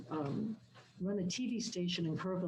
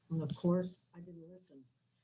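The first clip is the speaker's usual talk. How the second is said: ordinary delivery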